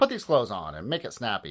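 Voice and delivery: ordinary talk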